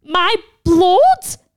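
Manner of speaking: very loud, shrill, screeching voice. Reading a story aloud, as Lily rises to her feet: screeching. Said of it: "Lily screeched".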